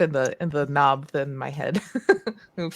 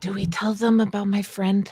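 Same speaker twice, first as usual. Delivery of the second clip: theatrical whisper; 4 semitones higher than usual. Leaning over to another character in the scene, stage whisper. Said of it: "Stage whisper".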